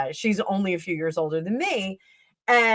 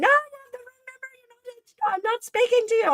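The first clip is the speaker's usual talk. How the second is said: funny put-on woman's voice, much higher, faster. Retelling a prank call to his aunt, the prankster answering in a funny woman's voice. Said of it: "he made a funny woman's voice and said".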